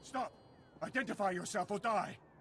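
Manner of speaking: high, shouted delivery.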